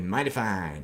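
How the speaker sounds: low voice with slight American accent. Showing how they say a favourite phrase properly, with a slight American accent. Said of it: "sometimes it with a slightly American accent".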